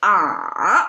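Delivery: ah dips in third tone, falling then lifting slightly. Explaining the hardest tone, the third, with falling then slightly rising ah. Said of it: "the third tone, this ah, you have a fall, and then you kind of rise up a little bit".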